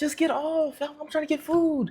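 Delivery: sugary, sweet, innocent tone pitched very high. Retelling what a woman on stream said to a man, mock sweet innocent voice. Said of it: "innocent and sweet her voice is sounding".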